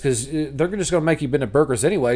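ordinary delivery

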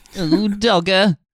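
very high-pitched, squeaky comic character voice. Doing a character reading the shipping forecast: Frank Spencer voice. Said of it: "Listen to Frank Spencer doing the shipping forecast".

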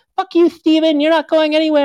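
very high, loud screaming. Retelling a mom and son fighting on the lawn: imitating a mom screaming. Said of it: "they were screaming at each other".

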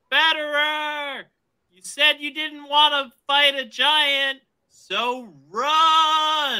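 yelling as loud as possible, full volume. Turning back while heading into a tower: yelling as loud as possible. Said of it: "I'm gonna yell as loud as I can".

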